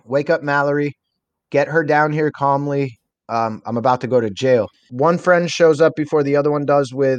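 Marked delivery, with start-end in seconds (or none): none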